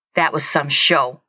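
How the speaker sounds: speaking through gritted teeth. A man finally speaks to the woman waiting for him, through clenched teeth. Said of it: "David said through clenched teeth".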